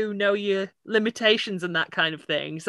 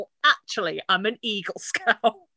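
put-on proud, boasting voice; 3 dB quieter than usual. Retelling how Ray answers Len calling him a Boy Scout, imitating Ray's proud boast. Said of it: "the pride Ray has when he goes".

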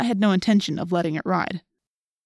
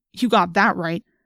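ordinary delivery

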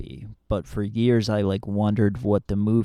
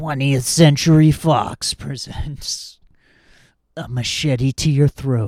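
loud, raised movie trailer announcer voice; 5 semitones higher, 8 dB louder than usual. Retelling a film character who does trailer voices while killing, movie trailer voice. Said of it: "do like trailer voices".

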